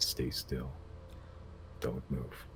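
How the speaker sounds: hushed, near-silent, very quiet low voice. Describing a scene to a listener, voicing a warning from the distance in a low voice. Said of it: "you hear in a low voice".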